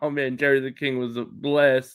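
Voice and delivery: ordinary talk, nothing marked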